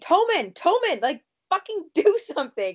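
play-acted, high, screamed outburst. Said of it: "she's just screaming".

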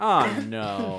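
play-acted disappointed tone. Imitating the first mate's reaction to explain it: imitating a disappointed movie character.

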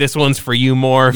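ordinary delivery

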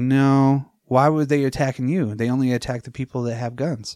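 ordinary talk

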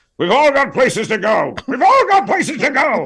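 put-on character voice, very high and swooping. Voicing George Washington as a character, George Washington character voice. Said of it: "the voice for George Washington, which I always thought should sound sort of like this".

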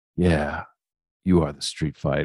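cool, calm, very low and quiet voice. Retelling how he answered after she was screaming, imitating Jericho, cool and calm. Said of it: "him just so cool and calm".

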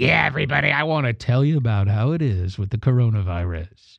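low, gravelly voice. Imitating Fauci talking about the coronavirus: gravelly Fauci voice. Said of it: "Fauci kinda had the gravelly voice".

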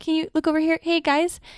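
put-on high-pitched, awkward teen voice. Discussing a film's hero, acting out how he would lead: Peter Parker impression. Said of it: "that's how he would lead".

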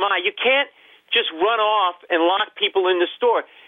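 acted-out scolding outburst, kept small and restrained. Retelling what was said to a mother the next day: imitating own past yelling. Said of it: "I'm yelling at my mother".

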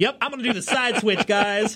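high, smug, cocky, offhand voice.

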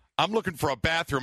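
ordinary talk

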